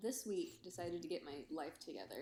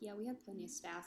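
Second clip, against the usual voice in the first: usual speaking voice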